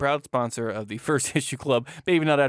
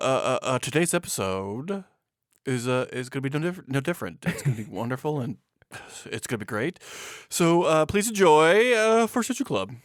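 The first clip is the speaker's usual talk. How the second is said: halting, stop-start, stalling on uhs, catching breath; 2 semitones higher than usual. Opening the show in a practiced Jeff Goldblum impression. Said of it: "my Jeff Goldblum impression".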